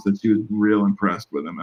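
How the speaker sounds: ordinary talk, nothing marked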